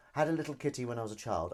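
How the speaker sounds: ordinary delivery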